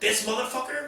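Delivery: high, loud mock outraged reaction.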